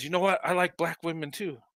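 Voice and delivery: soft, secretive, confiding half-whisper. Retelling what a coworker at work told him: imitating a coworker half-whispering. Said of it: "He, like, whispered to me".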